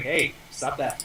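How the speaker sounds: passionless reprimanding tone. Voicing a character who pokes a monster with a naginata: flat, passionless scolding. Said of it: "muster up as, uh, little, um, passion as possible".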